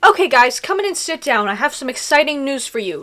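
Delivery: ordinary delivery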